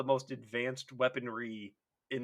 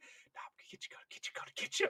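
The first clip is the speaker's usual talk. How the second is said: mock low, threatening whisper, quieter. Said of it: "that low whisper".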